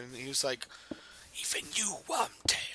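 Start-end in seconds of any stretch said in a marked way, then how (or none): 1.4-2.8 loud stage whisper, words forced out hushed. Recapping Goblet of Fire, quoting the master's reply to Wormtail while imitating a whisper. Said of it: "it's a it's a whisper".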